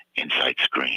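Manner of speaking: quiet, soft, hushed, private half-whisper. Retelling what the quarterback told him at his locker: imitating Jordan Love half-whispering. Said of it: "he whispers".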